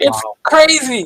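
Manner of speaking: high, laughing through words.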